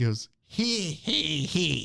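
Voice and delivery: put-on cackling witch or spirit laugh. Narrating a story, voicing a spirit creature pointing at a girl, cackling spirit voice. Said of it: "I love that voice".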